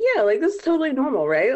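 flippant, breezy, totally normal tone, high, loud and fast.

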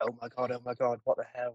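play-acted frantic, panicked freak-out outburst. Retelling his reaction when a solution might be wrong: imitating himself freaking out. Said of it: "He was freaking".

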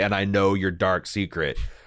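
ordinary talk

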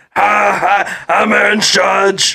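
put-on Austrian accent. Imagining how another man would introduce himself, in an Arnold Schwarzenegger accent. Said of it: "would just have an Arnold Schwarzenegger accent".

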